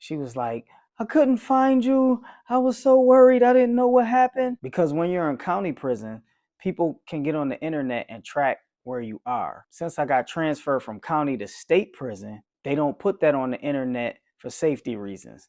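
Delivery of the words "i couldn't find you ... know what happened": very high, loud hysterical sobbing. Retelling how she answered his call from prison, imitating someone crying hysterically. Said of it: "she broke down crying hysterically".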